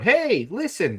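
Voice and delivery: high, loud calling out. Joking that the whole movie is Navi calling out: imitating Navi. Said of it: "you just hear Navi going".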